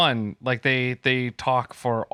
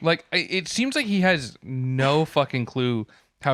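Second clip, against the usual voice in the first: ordinary talk, nothing marked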